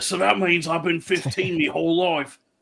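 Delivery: put-on vague British accent, kept going.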